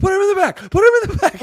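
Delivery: very high-pitched, loud yelling. Imagining the listener yelling at a man from his car: retelling a yell. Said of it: "You're just yelling at him".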